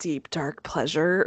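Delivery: low, sultry, suggestive tone. Talking about loving true crime podcasts, in a suggestive tone. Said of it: "I said that in a very suggestive way".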